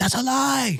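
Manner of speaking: acted-out, very high-pitched, unhinged, losing-it outburst. Retelling what the other driver said to the sheriff: imitating someone losing it. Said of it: "just losing it".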